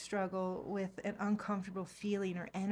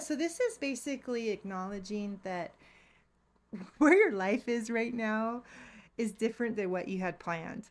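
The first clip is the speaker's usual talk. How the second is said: loud, cracking up laughing through the words; 2 semitones higher, 5 dB louder than usual. Giving a reading to Pisces, laughing while talking. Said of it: "Sorry I'm laughing".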